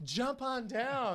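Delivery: very high, loud, flamboyant calling voice. Retelling a man at a party calling up to a tree: imitating a flamboyant man. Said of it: "Why are you talking like my aunt?".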